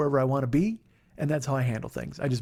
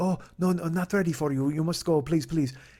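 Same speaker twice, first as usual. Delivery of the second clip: gracious, polite put-on Japanese accent; 3 semitones higher than usual. Retelling a man at the restaurant politely turning him away, in put-on accent. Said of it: "I'm not going to do the accent".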